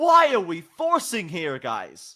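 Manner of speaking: put-on mad, disappointed dad voice, swooping pitch. Asking why the team is forcing a fight: channeling Freak, disappointed father. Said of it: "[name] sounds like a disappointed father".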